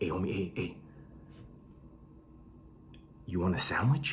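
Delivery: low, soft, paranoid whisper. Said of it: "why did you whisper right now".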